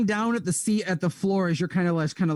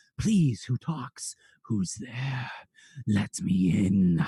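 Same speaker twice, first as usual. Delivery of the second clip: slow, hushed, deep-sounding half-whisper; 9 semitones lower than usual. Voicing abyssal voices heard through a book: half-whispering abyssal voices. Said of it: "hearing whisperings of various abyssal voices".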